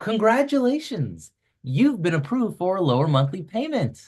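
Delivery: mock cheery, excited, upbeat salesperson voice. Imitating a bank's call offering a lower monthly payment: imitating an excited bank caller. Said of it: "All excited".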